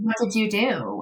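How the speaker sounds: plain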